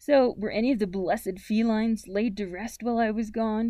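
ordinary talk

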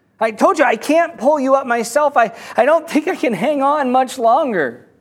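desperate shout.

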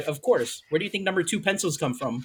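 ordinary talk, nothing marked

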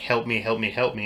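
ordinary talk

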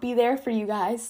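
voice cracks mid-word on guys. A host telling viewers about new weekly episodes, voice cracking. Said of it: "that was a voice crack".

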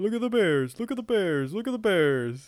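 loud, swooping, animated cartoon bear voice. Urged by friends to do Yogi Bear, the speaker tries: Yogi Bear voice. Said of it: "you gotta do yogi bear".

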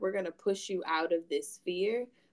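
ordinary delivery

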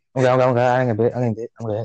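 ordinary talk, nothing marked

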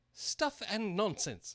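very loud, very high-pitched outburst. At a trial, someone protests the queen's call for sentence first: loudly. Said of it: "said Alice loudly".

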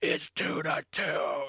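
mock very slow, stretched-out, high holler. Retelling a yell heard on the broadcast: imitating someone yelling. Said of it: "You could clearly hear on the broadcast someone yell".

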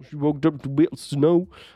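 bad put-on American accent. Passing on what another person said, in a bad American accent. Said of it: "that was a really bad accent".

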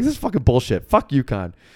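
acted anger. Recalling walking off to stand near the door, retelling being mad. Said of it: "And so I was mad about that".

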